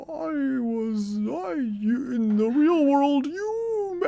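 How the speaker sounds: very high, slow, dragged-out dim-witted dopey voice. Retelling a doppelganger mom's speech from a film: dumb-sounding imitated voice. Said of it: "the voice I'm doing sounds dumb".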